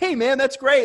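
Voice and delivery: high, chipper, upbeat sports guy voice.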